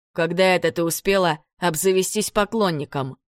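ordinary delivery, nothing marked

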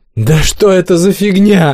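unhinged, high, hysterical yell. Narrator reads a line by one of the youngest aboard amid chaos, hysterical yell. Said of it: "истерично заорал кто-то из самых молодых".

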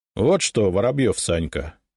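ordinary delivery

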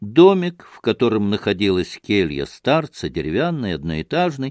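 ordinary delivery, nothing marked

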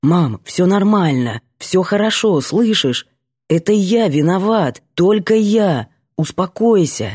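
soothing, convincing reassurance, pushing through audible pain. Despite sudden head pain, a son tries to calm his mother, convincing despite pain. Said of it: "Я стараюсь быть убедительным, несмотря на боль".

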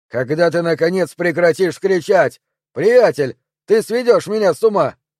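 exasperated, fed-up outburst. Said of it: "Раздраженный мужской голос".

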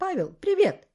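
high-pitched cried-out exclaim. Spotting a tall young man approaching, a woman exclaiming. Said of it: "Она вскрикнула".

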